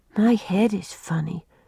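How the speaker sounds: usual speaking voice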